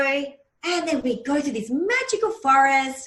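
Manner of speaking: put-on sing-song storytelling voice, as for a young child. Showing how hypnosis clients are spoken to: talking like to a four-year-old. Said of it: "I do this instead of talking in that hypnotic voice".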